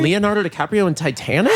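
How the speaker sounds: ordinary talk, nothing marked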